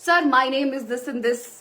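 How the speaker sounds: half-hearted, mild token shout. Demonstrating a self-introduction spoken very loud. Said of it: "अगर मैं एकदम जोर से बोलना शुरू कर दूं".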